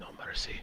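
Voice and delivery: hushed whisper, very close to the ear. Voicing a character who leans in close to an enemy: whispered in character. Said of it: "whispers into his ear".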